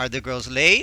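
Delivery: rising tune at the end on late. Explaining how questions sound, demonstrating rising question intonation. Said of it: "the voice goes up".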